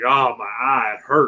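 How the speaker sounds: slow put-on southern accent with a drawl. Retelling what the referee said after the match: imitating a southern accent. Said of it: "He has a southern accent".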